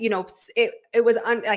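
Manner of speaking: stammering over words. Mid-discussion, the speaker trips over their words, stuttering. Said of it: "sorry, I'm stuttering".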